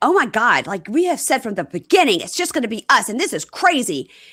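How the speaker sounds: put-on, teenager-style tantrum voice. Retelling a woman's reaction to a family visit; mimicking a teenage tantrum. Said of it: "she threw a teenager level fit about it".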